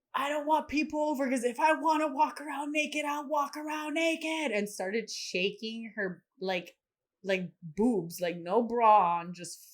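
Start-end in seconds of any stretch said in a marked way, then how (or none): 0.1-4.5 furious, very high-pitched shouting. Retelling what a woman said, speaker is retelling an angry yell. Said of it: "aggressively shake her tits while yelling".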